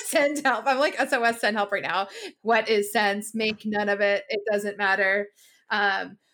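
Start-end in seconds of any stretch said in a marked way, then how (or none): none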